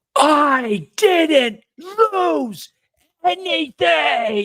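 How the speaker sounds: screaming at top of lungs, very high, shrill. Player's character, blamed for a lost sheep, turns to answer: screaming at the top of lungs. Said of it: "I scream at the top of my lungs".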